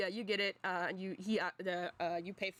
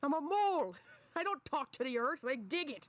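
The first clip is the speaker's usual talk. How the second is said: cranky, grumbling mole voice, pitched up; 7 semitones higher than usual. Voicing the mole character for the others: grumpy mole voice. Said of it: "He's like a grumpy dude".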